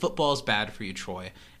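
plain

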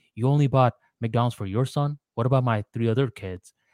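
ordinary talk, nothing marked

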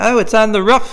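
very high-pitched put-on British man's accent. Imitating a british guy saying roof as rough: british accent. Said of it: "like a British guy going".

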